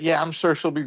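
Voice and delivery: ordinary delivery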